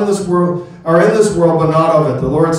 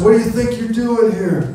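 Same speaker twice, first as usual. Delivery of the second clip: mock hostile, confrontational shout, high and intimidating; 6 semitones higher than usual. Retelling how a man on the street confronted them: imitating a man yelling. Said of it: "he starts yelling at us".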